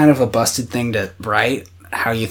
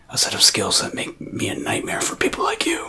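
put-on menacing movie voice, sometimes quieter; 3 semitones lower, 8 dB quieter than usual. Quoting a line from the movie Taken: Liam Neeson impression. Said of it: "That was a decent impression".

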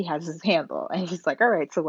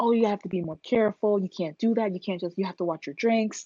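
put-on yelling in a man's voice, blaming; 3 semitones higher than usual. Retelling a story, acting out a man blaming a woman on the phone, retelling a guy yelling. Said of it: "this dude starts yelling at her and blaming".

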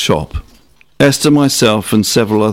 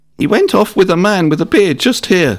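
put-on shrill, screechy, high-pitched little-boy voice; 9 semitones higher than usual. A narrator reads a young boy's line, in a screechy, high-pitched child voice. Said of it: "said the young boy in his screechy, high-pitched voice".

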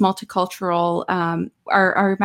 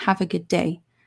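put-on creepy tone, quieter; 5 dB quieter than usual. Retelling what a man in an elevator said: imitating a creepy tone. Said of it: "very, very creepy".

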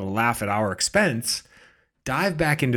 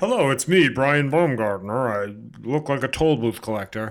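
mocking celebrity-cameo voice. Mocking how the actor records his video messages: mocking Brian Baumgartner impression. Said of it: "He just does them as Brian Baumgartner".

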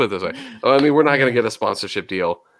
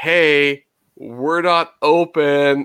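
mock, very slow, drawn-out "hey"; 3 semitones higher than usual. Retelling how an employee told the waiting cars: imitating someone yelling. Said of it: "he's, like, yelling it to everybody".

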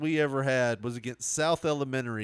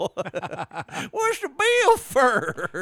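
put-on very high, swooping country hillbilly voice; 9 semitones higher, 4 dB louder than usual. Speaker imitates a woman who won't handle the finances, in a Hee-Haw hillbilly voice. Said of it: "I don't know why I made her sound like a hillbilly from Hee-Haw".

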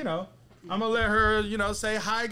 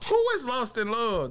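usual speaking voice

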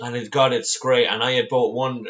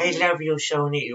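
cutesy pet voice, higher; 5 semitones higher than usual. Addressing the girl once seen in America, in a silly pet voice. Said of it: "We used to talk like that".

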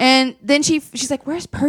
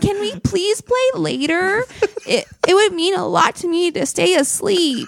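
put-on super polite childlike voice, higher pitch; 7 semitones higher than usual. Retelling a kid answering being poked awake: imitating Percy, super polite. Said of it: "just super polite".

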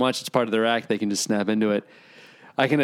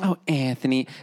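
imitated woman's voice; 2 semitones higher than usual. Retelling a moment at the movie theater, imitating his mother. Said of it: "like his mother".

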